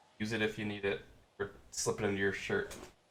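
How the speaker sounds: quiet aside, muttered and kept under the breath. A player's character slips an item into someone's hand, speaking under the breath. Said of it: "I under my breath as I like put it in your hand".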